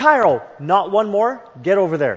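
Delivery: play-acted stern, firm, no-nonsense commanding tone. The speaker retells ordering the dog cairo over, retelling a firm command. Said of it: "in a firm voice".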